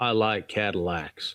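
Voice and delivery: acted-out icy, cold, cool delivery. Retelling a movie scene where a car thief talks to the salesman: imitating a cold delivery. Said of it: "coldly says to him".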